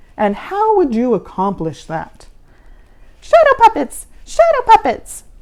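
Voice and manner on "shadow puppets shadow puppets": loud, very high, squeaky little cry. She answers Mister Z's question in front of the class, squeaky voice. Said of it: "She squeaked again".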